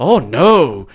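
quick, sad little cry. Retelling a quick reaction in an episode, imitating Colin sounding sad. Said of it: "you sound so sad there".

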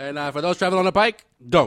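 mock helicopter traffic reporter voice. Acting out a traffic report with the others, as the helicopter traffic reporter. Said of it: "The guy in the chopper when they're like doing the traffic report".

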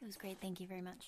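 very quiet, low, close-mic hushed voice. Welcomed back by a co-speaker, answering a question in a quiet voice close to the mic. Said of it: "Why do you talk so close and so quiet?".

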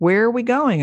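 high, upset, distressed exclamation. Narrator, riding as a passenger, asking their daughter who is driving; distressed exclamation. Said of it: "I exclaimed, distressed".

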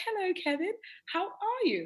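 very high, posh put-on English accent. Describing his mother, the speaker imitates how she greets him, in her posh voice. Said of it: "So my mother speaks like this".

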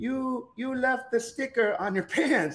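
put-on high European-accented voice. Quoting a European woman who pointed at his pants, in a little European voice. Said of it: "I hear this little European voice".

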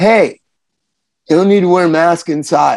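pushy, meddling, nosy stranger voice, butting in. Reenacting the other speaker's market encounter, playing the guy there. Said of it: "I'm going to be the guy".

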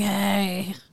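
raspy put-on voice. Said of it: "a raspy".

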